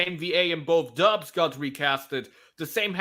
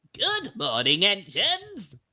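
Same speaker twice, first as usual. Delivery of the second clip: swooping, sing-song put-on character voice, wide pitch swings; 2 semitones higher than usual. Imitating how the new dub voices a character: high-pitched Sir Topham Hatt voice. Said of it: "the guy does a very high-pitched kind of voice".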